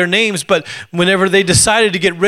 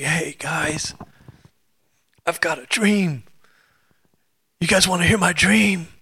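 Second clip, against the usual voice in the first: soft, laid-back, easygoing surfer-dude voice; 7 dB quieter than usual. Acting out Joseph from the Bible, done as a Keanu Reeves voice. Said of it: "I don't know why Joseph sounds like Keanu Reeves".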